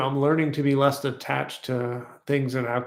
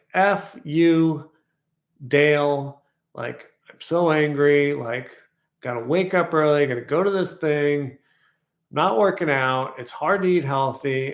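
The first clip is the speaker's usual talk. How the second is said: normal talking voice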